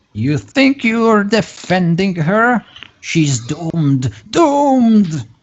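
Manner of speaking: very high, shrieking, screamed voice. Voicing a wounded enemy as she screams at the players: screaming. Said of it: "she screams".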